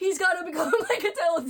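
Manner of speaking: acted angry, passionate rant. Retelling own past words about an author: imitating own angry voice. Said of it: "I was saying it in, like, an angry voice".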